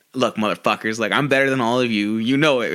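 mock sneering, menacing tone. Retelling a wrestler turning bad cop on the others: imitating a bad-cop threat. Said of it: "good cop, bad cop routine".

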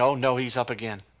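dismayed, groaning character voice. Imagining what the devil says each morning: imitating the devil. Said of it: "I'd imagine him saying".

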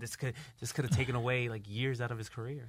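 low, hushed, grave sports commentator voice. Imitating commentators reacting to a wrestler's injury: imitating commentators' really low voice. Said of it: "the tone of their voice, like, really low".

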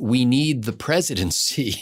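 whispered. Retelling what a congressman said to a woman: imitating a whisper. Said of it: "and he whispers".

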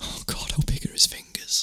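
hushed, breathy whisper under the breath. Speaker retells what one of the girls whispered to him: retelling a whisper. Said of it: "whispered to me".

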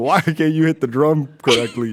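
very loud, berating, scolding telling-off tone. Retelling how a strict music teacher laid into students: imitating a teacher scolding. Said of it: "lays it into it".

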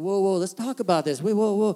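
mock soothing, easy, calm, patient placating tone. Retelling the speaker's reply when she started yelling, retelling being patient. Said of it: "I was really patient".

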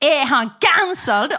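mock screaming. Recounting what happened, the speaker retells screaming a question before walking out. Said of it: "då skrek jag bara".

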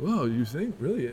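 put-on clumsy, poorly done Spanish accent. Retelling how people reacted when told about beer flaws, in a bad Spanish accent. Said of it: "that's not a good Spanish accent".

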